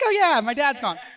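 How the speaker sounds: breezy, cheerful delivery. Retelling how the line about a missing dad was played: imitating own upbeat delivery. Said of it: "all upbeat about it".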